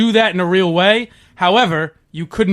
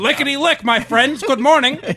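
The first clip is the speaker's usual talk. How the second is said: put-on Boston radio host voice, pitched higher; 7 semitones higher than usual. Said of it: "You sound a little bit like the Boston radio host Jeff Kuhner now".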